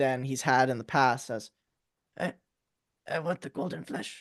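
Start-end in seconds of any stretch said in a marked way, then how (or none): 2.2-4.2 near-whispered, cowed, daunted, intimidated stammer. Voicing a character who looks over at the listener, in a more intimidated voice. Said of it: "in a little bit more intimidated voice".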